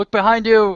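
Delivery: very high, loud shouted yell. Player in a dice game, dizzy on his back, calls to another player: in-character yell. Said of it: "So I'm ye- I'm yelling to you".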